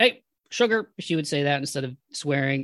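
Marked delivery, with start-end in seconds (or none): 0.0-0.9 very high, raised, exclaiming teacher voice. Retelling what a math teacher said at the start of class: imitating Coach Durf's voice. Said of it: "She talked like this".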